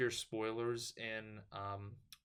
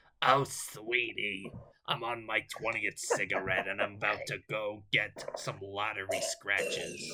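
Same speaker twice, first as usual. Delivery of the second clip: put-on sickly elderly woman's voice; 4 dB louder than usual. Speaker tells the other person how they sound, doing an old woman with throat cancer voice. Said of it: "You sound like an old woman that has like throat cancer".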